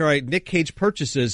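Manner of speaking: plain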